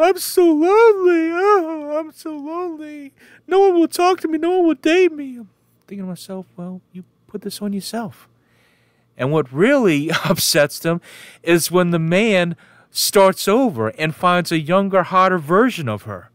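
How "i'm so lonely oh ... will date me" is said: very high-pitched, acted-out weepy, sobbing wail. Mocking a woman's uploaded video, imitating her crying. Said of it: "she'll upload another video of her crying, going".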